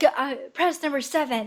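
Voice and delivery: play-acted, held-in, mild contained yell. Retelling a character's outburst at the workers: imitating Hoi Wan screaming. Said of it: "And then she screams at them".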